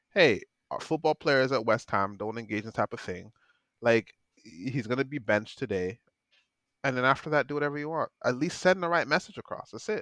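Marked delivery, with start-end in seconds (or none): none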